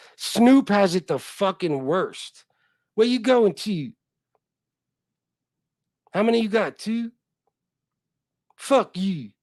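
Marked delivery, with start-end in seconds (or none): 3.0-9.2 put-on Baltimore street accent. Mocking how people talk with an imitated Baltimore accent.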